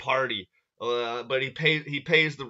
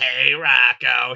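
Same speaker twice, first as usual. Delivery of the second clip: very loud, belted heavy-smoker voice; 9 dB louder than usual. Voicing a flirting toad neighbor from a comic, Bev's smoker's voice. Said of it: "She has that voice like she smokes cigarettes like every fucking hour".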